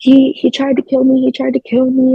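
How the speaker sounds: high screaming cry, screamed out twice. Retelling shouting at him as police detain him: retelling own screaming.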